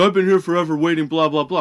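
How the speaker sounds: angry yelling. Retelling a customer yelling about waiting forever: imitating someone yelling. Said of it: "yelling at me".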